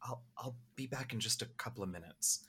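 whispered delivery. Voicing Kent telling Virgil something quietly: whispering in character. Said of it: "Kent is just gonna whisper to Virgil".

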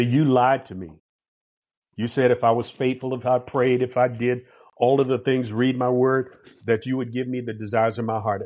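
plain

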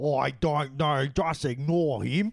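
put-on horrible Australian accent. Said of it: "Horrible Australian accents".

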